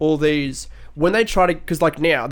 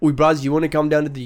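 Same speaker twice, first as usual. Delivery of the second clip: fake, put-on South African accent. Trying out an accent for a rich aristocrat character with a friend, put-on South African-sounding accent. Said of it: "That's like South African".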